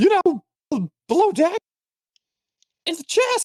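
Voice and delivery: high-pitched character voice.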